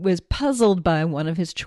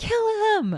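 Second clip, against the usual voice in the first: mock very high, shrill shrieking scream. Retelling screaming at the television while the cat sat on lap: retelling a scream. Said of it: "I screamed at the television".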